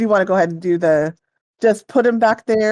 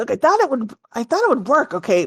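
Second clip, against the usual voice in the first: loud, carrying stage whisper; 5 semitones higher than usual. Voicing a man defending his plan to his partner: loud whisper. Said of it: "says in a loud whisper".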